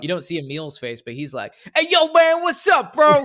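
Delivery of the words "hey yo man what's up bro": loud, high-pitched, belted, super urban-sounding voice. Imitating Emil from Reach saying hello, in an Emil impression with a super urban voice. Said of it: "a super urban voice".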